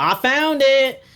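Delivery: very high, loud yell, called over a distance. Voicing a character who finds something outside, yelling over: NPC yelling. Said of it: "yells over to you. He goes".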